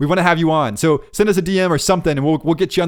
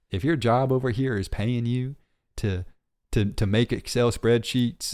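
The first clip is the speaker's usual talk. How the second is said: drawn-out, slow put-on country accent; 6 semitones lower, 7 dB quieter than usual. Repeating the previous sentence about a job, now in a country accent. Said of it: "let me say it in a country accent".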